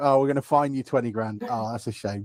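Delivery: ordinary talk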